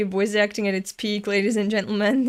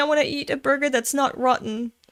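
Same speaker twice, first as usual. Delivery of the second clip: ordinary talk, nothing marked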